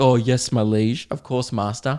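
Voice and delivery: mock servile, pretend obedient servant voice. Joking about how the man expected obedience: mock servile reply. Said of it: "As if I'd be like".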